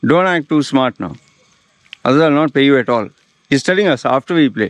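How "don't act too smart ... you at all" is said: slightly testy, irritated voice. Retelling how a party host scolded the musicians: imitating an irritated voice. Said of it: "Now his voice got a little irritated".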